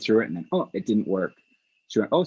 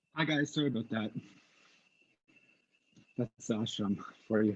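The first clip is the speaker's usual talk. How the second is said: out of breath, winded, much quieter; 9 dB quieter than usual. Speaker returns to viewers after stepping away, out of breath. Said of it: "I'm a little bit out of breath".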